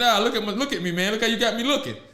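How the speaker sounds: usual speaking voice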